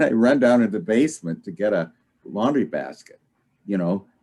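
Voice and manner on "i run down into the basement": usual speaking voice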